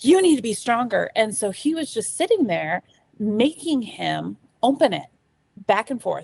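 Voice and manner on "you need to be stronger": mock livid outburst, higher and louder. Retelling an ex-husband's angry words to a son: imitating someone livid. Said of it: "my ex-husband got so angry at him, just livid".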